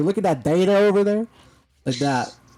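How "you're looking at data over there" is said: put-on Southern accent with raised pitch. Showing how people in Georgia say data: put-on Southern accent. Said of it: "with the Southern flair".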